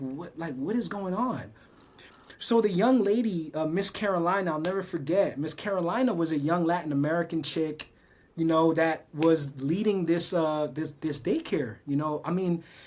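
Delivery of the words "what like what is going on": stunned, bewildered, shocked disbelief. Retelling own childhood reaction at the daycare: retelling own shocked words. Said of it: "in shock 'cause I'm like".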